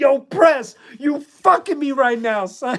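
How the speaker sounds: shrill, very high yell. Retelling yelling at press over a live mic, retelling a yell. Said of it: "I had just yelled at him".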